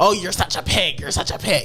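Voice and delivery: small, evil villain-like voice. Retelling what he would say to her every single time: imitating his little evil voice. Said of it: "In his little in his little like evil voice".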